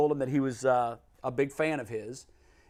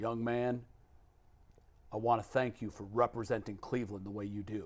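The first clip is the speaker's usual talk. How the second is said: low, almost half-whispered words; 4 semitones lower, 8 dB quieter than usual. Retelling what Mr. Brown said to him at their interview: Mr. Brown's low near-half-whisper. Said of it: "he talked so low and almost in a whisper".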